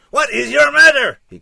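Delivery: raw cry, very high and loud, rough. Narrator reads a tall man backed against the fireplace, crying out. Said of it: "he cried".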